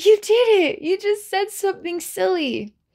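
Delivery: high, gasping, delighted, excited squeal.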